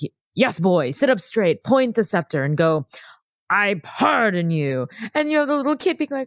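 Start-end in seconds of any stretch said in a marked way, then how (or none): 0.0-4.9 stern, firm, commanding tutor-like tone. Retelling a film scene where Caesar teaches a boy: Rex Harrison as Caesar. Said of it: "you just have Rex Harrison sitting next to this little boy being like".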